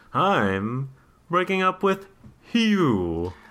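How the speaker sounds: cartoonish talking-owl voice with drawn-out I'm. Retelling how George breaks up with her in a weird way, in a Mr. Owl voice. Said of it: "Are you doing the owl, Mr. Owl".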